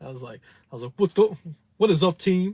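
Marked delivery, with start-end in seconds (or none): 1.0-2.5 loud, high, hyped-up voice. Retelling an impression of Sledge done for a fiance: Sledge impression. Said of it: "I was just doing an impression of you".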